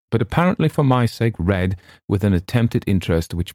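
ordinary delivery, nothing marked

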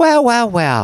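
put-on very high, patronizing, condescending tone. Imitating what the church lady would say, mock-condescending. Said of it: "condescension and being patronizing and passive aggressive".

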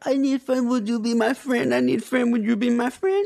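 put-on very high, pleading needy kid voice, like begging puppy.

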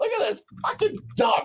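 bursting out laughing. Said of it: "Joe's looking up".

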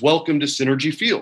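plain

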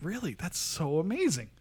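mock stunned, almost insulting disbelief, swooping, shocked gush. Retelling people's almost insulting but funny reaction to your being hired for a cruise, imitating someone's utter shock. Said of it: "like the utter shock was like almost insulting".

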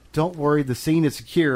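plain

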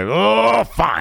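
put-on very high, rough, furious voice. Retelling a wrestler agreeing to shake hands: imitating an angry reply. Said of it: "in the most angry way".

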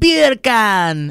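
put-on Jamaican accent. Showing how a word play sounds like bacon: Jamaican accent. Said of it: "Like you're saying bacon in Jamaica".

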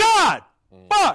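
very loud, high, shrill, full-throated shout. Podcast host reacting to a Chiefs pick: yelling. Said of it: "I just yelled into the microphone".

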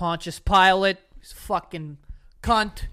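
loud, slow put-on Boston accent. Imitating a priest in the same bit: imitating a boston priest. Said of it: "It's like a priest".

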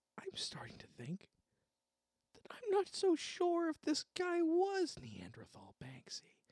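very high, hushed whisper. Speaking to a companion so another character can't hear, whispering. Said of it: "I'm just whispering so Rag can't hear us".

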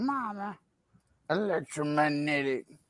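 soft, hushed mumble in a character voice. Asked for an impression, recalling the Waterboy: Waterboy impression. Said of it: "like the water boy? He was like".

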